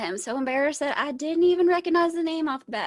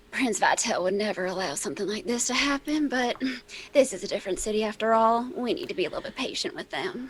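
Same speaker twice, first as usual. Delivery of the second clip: hushed stage whisper meant to be overheard; 4 dB quieter than usual. Game master voicing Magnolia as she turns to her compatriots; Magnolia's stage whisper. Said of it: "do like a stage whisper".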